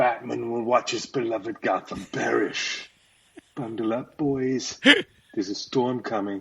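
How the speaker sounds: ominous, growled, menacing movie-villain trailer voice. Speaker practicing his Mr. Freeze trailer line for the others, Mr. Freeze voice. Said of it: "My Mr. Freeze trailer".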